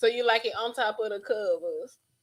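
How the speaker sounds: slow, drawling Southern rapper voice impression. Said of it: "That was in my [name] voice".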